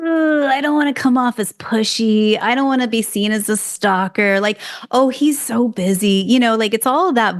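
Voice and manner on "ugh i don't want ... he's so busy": fretting, self-doubting, negative inner critic voice. Speaker acts out the inner voice that keeps people from acting: mock negative inner voice. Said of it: "that negative Nancy voice that goes".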